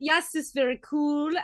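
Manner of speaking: put-on German accent. Imitating how German friends sometimes sound, put-on German accent. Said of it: "sometimes they sound very like".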